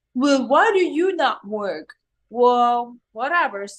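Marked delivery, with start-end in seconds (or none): 0.1-1.8 put-on Brooklyn accent. Explaining how women are treated, voicing a hypothetical questioner in a brooklyn accent. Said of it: "were you doing that with a Brooklyn accent?".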